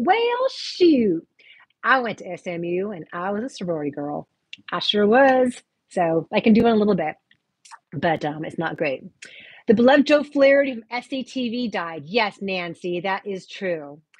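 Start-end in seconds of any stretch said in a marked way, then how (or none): 0.0-5.5 mild, sing-song light Texas accent. On a live stream, asked by a viewer to do one, light Texas accent. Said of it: "can you do a Texas accent?".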